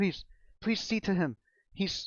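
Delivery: very high, breathless, out-of-breath pleading. A storyteller voicing a woman begging for help for her husband, pleading while catching her breath. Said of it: "She's like trying to catch her breath".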